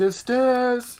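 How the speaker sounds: shrill, high-pitched, loud yell. Voicing a character who turns back to tell the group about stairs: yelling in character. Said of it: "There's no need to yell".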